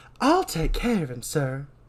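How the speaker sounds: put-on Southern woman's accent. Retrying a line after forgetting the voice: southern woman voice. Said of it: "how to do a southern like woman voice".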